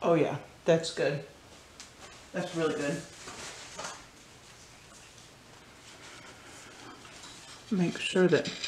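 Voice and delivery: talking while chewing. Video host tasting her recipe before stopping the video, talking while chewing. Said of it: "Sorry for munching in your ear".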